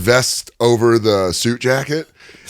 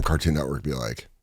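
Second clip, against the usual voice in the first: ordinary delivery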